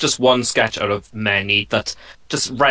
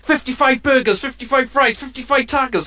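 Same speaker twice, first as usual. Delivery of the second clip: very high, over-the-top loud shouted yell. Retelling a story of a man ordering at a drive-thru, retelling a yelled order. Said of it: "just yells".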